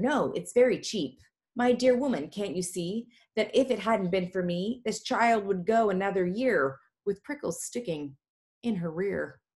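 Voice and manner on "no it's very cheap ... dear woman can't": ordinary delivery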